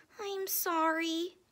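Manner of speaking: tiny, shrunken, small, high voice. Narrator reads the canary answering his mommy, in a small voice. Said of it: "he said in a small voice".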